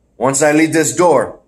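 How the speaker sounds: ordinary delivery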